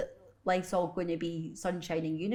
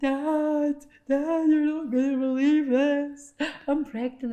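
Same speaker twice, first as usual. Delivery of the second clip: mock tearful voice, high and loud, one word drawn out; 9 semitones higher, 7 dB louder than usual. Recalling phoning dad in tears with pregnancy news; retelling a tearful phone call. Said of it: "ringing my dad up in tears".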